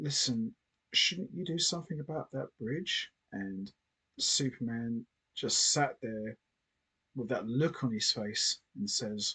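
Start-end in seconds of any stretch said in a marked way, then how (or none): 0.0-3.1 fearful, frightened stage half-whisper. Retelling a film scene, quoting Lana speaking to Superman: Lana fearful half-whisper. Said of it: "Lana whispers to Superman in fear".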